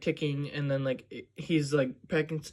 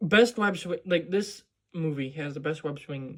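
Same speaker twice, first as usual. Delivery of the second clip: ordinary delivery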